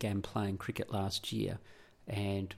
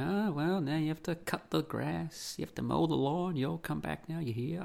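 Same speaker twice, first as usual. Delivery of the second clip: bad, failed American accent, pitched up; 7 semitones higher than usual. Imitating a wife at the end of a game: bad American accent. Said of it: "I can't speak American".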